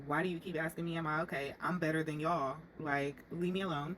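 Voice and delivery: ordinary delivery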